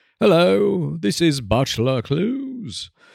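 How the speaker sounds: posh, upper-crust British aristocrat accent. Introducing the podcast, in a British aristocrat accent. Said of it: "unless I do like a aristocrat".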